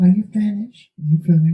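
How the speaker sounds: light, easy, high-pitched voice. Retelling how Joseph answered while the speaker yelled at him, Joseph's light voice. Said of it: "Joseph is saying in a light voice".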